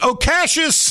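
mock shrill, thrilled shout, projected far. Retelling a mother yelling across a restaurant: imitating a mother yelling. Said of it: "Stands up and yells".

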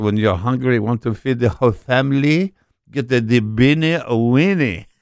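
put-on high, loud, thick French-accented commercial read. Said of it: "They should hire you to do their commercials".

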